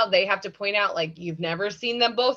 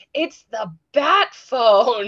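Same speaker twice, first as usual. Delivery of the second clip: loud, very slow stage whisper; 6 dB louder than usual. Retelling how a butler warns about the Bat Phone: Alfred's loud whisper. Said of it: "Alfred will really loudly whisper".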